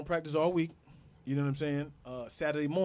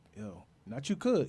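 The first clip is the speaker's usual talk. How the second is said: put-on low, lowered voice; 3 semitones lower than usual. Retelling a warning given after a broken collarbone: imitating a lowered voice. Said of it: "his voice got low".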